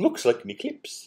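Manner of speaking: hushed, whispered, cartoonish Italian accent. Commenting on a scene while watching with others, the speaker uses a Mario voice. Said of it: "That's a good Mario voice".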